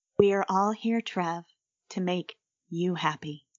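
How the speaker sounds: eerie, unnerving, machine-like robotic voice and intonation. Asked to do more of the voice, speaking with unnerving AI-like intonation. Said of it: "Really, really, really sort of unnerving and uh, A I-like intonation".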